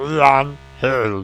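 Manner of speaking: put-on talking-toy voice. Trying to repeat a cry for help in a Speak & Spell voice. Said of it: "Only more speak in spell".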